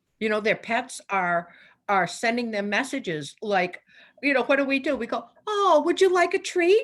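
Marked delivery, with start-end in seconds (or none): 5.5-6.9 put-on much higher, louder cooing baby talk. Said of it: "baby talk".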